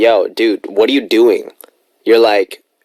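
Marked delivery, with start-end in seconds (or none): none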